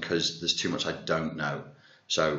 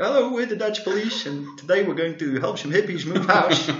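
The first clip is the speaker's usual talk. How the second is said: very high-pitched announcing voice; 13 semitones higher, 4 dB louder than usual. Imitating comedy police characters from a sketch show: Dutch Police voice. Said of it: "the Dutch Police, all they would do, they'd be like".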